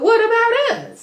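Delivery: very high, loud, whiny, hurt-sounding plea.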